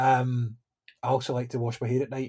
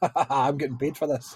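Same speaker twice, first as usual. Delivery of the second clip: acted-out gleeful laughing cackle. Speaker describing laughing in the morning shower during work, retelling gleeful laughter. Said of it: "spend most of my 15 minutes in the shower in the morning laughing".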